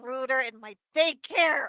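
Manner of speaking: rough, angry voice. A character looking around says this out loud, rough with anger. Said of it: "rough voice from anger".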